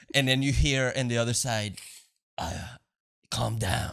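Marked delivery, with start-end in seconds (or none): 3.3-3.9 put-on dark, edgy voice. Retelling a movie scene, a voice answering from across the room: imitating Gordon's dark edgy voice. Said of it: "such a, like, dark, edgy voice".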